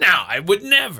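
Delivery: put-on, overdone, high-pitched, exaggerated derisive delivery. Retelling how the partner refused to bring the bag: mocking imitation of partner. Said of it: "I did not say it like that".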